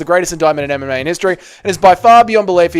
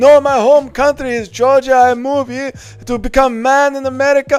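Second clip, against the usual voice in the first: insistent, pitched-up, firm protesting tone; 8 semitones higher than usual. Answering a chat request, voicing the other fighter in the skit: Bryce impression. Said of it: "impression of Marab trying to convince Bryce".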